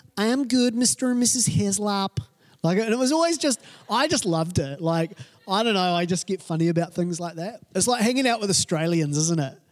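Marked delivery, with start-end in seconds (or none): 0.2-2.2 put-on hugely strong American accent, pitched up. Imitating Jennifer answering Mr. and Mrs. Heslop, in Jennifer's strong American accent. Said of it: "this girl had a hugely strong American accent".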